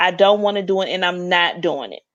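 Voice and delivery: serious, respectful but stern and unbending voice. Describing how a man refuses things, imitating his stern refusal. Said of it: "it's the sternness in his voice".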